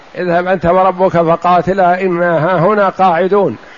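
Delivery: normal talking voice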